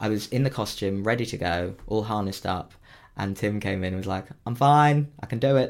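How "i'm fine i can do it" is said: very bad, slow Australian accent. Retelling what a colleague said when he came in: worst Australian accent ever. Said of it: "That was the worst Australian accent ever".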